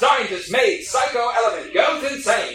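slow, high British accent.

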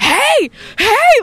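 very high shriek at the top of the lungs. Retelling yelling at a creepy man with hands around a woman's neck, retelling a full-lungs yell. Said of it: "at the top of my lungs".

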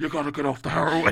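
put-on whisper. Imitating Tony Soprano scolding Christopher up close: whispering as Tony Soprano. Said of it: "he would whisper into the mouth".

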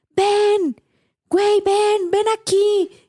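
put-on very high calling shout. Retelling how a woman shouted to her husband: imitating a shout. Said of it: "le grita a su esposo".

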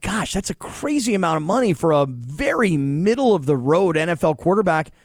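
ordinary talk, nothing marked

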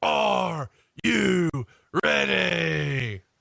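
rough, creaky, raspy voice, "ready" stretched long. Showing how a wrestler would say the catchphrase: imitating Triple H's catchphrase. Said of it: "I think he would go".

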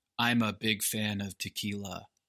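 soft, dry, emotionless deadpan monotone. Speaker retelling how a guy reviewed someone's dish, mimicking a dry monotone. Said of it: "emotionless, dry, monotone reviews".

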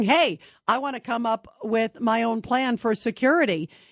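ordinary delivery

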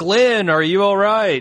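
high, loud call projected across a distance.

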